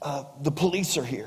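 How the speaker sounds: put-on hushed, soft half-whisper in a small boy's voice. Retelling a joke where a little boy answers the phone: imitating a half-whispering little boy. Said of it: "the little boy was kinda whispering".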